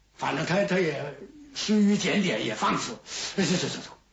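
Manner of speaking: usual speaking voice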